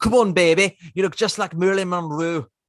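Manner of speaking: bad, high-pitched Liverpool accent, clearly poorly done. Retelling how a man talked to a woman, the speaker quotes him in bad Liverpool accent. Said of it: "Let me put on my Liverpoolian accent".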